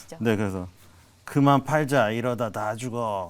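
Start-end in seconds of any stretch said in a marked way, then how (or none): 1.2-3.3 put-on old grandpa voice. Asked to show an impression, in 오일남 voice. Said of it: "오일남 할아버지가 ... 성대모사를 하는".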